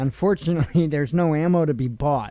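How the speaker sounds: talking while laughing through the words. Speaker giving an update, laughing while speaking. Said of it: "I'm kind of laughing when I say that".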